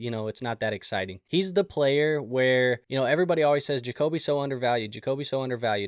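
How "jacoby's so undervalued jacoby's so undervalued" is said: usual speaking voice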